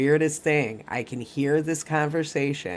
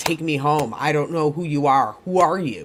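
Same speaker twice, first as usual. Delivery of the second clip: put-on yelling, slower. Recalling a woman who suddenly yelled at the speaker and her sister-in-law, retelling a yell. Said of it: "she just started yelling".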